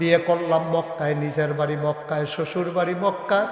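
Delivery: soft, hushed, confiding voice.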